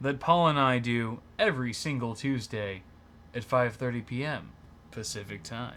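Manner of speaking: mock seductive delivery. Restarting the show intro more slowly for a joke: put-on seductive tone. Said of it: "you're trying to seduce everyone".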